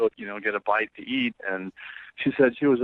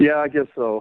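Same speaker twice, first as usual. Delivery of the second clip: dejected, beaten-down, defeated, resigned tone; 4 semitones higher, 6 dB louder than usual. Asked by the host if he's ready to phone her, answering defeated. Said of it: "you sound so defeated".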